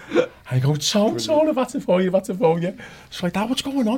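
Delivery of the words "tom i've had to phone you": put-on, very high screaming. Retelling their dad screaming at them on the phone: retelling a scream. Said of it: "He's screaming on the phone".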